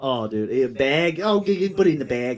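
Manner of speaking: put-on Minnesota accent. Mimic the guy from minnesota whose talk you could not understand, imitating a minnesota accent. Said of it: "he's from Minnesota".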